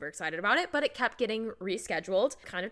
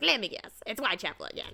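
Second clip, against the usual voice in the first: mock, put-upon, grumbling gripe. Describing a game character who complains the whole time, mock complaining. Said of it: "He's complaining the whole time".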